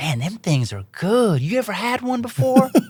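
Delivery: put-on American Southern accent. Retelling what a windshield repair guy said: imitating a Southern accent. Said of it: "With that accent".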